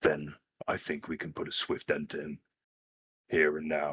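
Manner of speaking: hushed, quiet speaking voice. Urging the others in character to stand together: hushed tone. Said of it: "I'm kind of speaking in a hushed tone".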